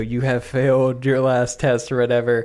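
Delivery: put-on booming godlike voice. Imagining a scene where a man reaches heaven, the booming voice of God. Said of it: "the boobied voice of God go".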